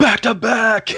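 very loud, high-pitched shout. Retelling a call to teammates as skeletons came in: retelling a yell. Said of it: "I yelled".

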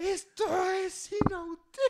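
shrill, very high, wailing sobbing shout. Retelling someone's shouting, crying outburst, mock shouting while crying. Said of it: "gritaba así durísimo y lloraba".

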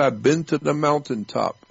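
ordinary delivery

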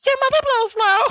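put-on, very high girl voice.

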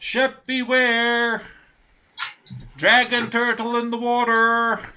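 shrill, very loud, high, drawn-out call. Voicing a lookout in the crow's nest warning the crew: calling down a warning. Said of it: "he calls down and he says".

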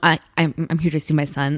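low, puffed-up, posturing macho voice. Retelling a character asking to see his son: imitating a macho tone. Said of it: "he gets all, like, macho".

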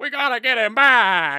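booming, slow, drawn-out, somewhat restrained. Joking about a movie remake, doing a Tom Hanks voice. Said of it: "It's Tom Hanks doing that voice".

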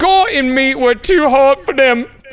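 put-on very high-pitched, loud Cockney accent. Retelling a woman's story aloud, saying her words in a My Fair Lady accent. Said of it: "going with my fair lady accent".

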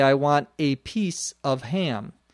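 slow, unhurried, careful, each word set apart. Demonstrating how a sentence is said for emphasis: speaking slowly. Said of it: "if I said it slowly".

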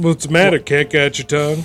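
put-on grandfatherly old man voice. Imitating what a grandpa would say: imitating Grandpa. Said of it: "Sounds like something Grandpa uses".

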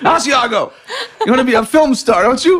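terrible put-on Italian accent, high and loud. Acting out a scene between Asiago and her papa, in a bad Italian accent. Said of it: "That's my Italian".

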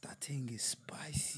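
hushed, soft, slow whisper.

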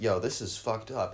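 ordinary talk, nothing marked

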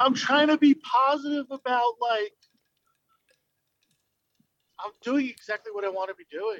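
crying through the words, voice cracking. Speaker, crying again while talking about their work, crying while talking. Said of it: "now I'm fucking crying again".

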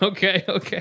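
awkward high voice.

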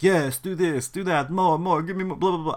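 high, cliché, cartoony vampire voice. Imitating a photographer directing a model, in a vampire voice. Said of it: "I don't know why I'm making him sound like a vampire".

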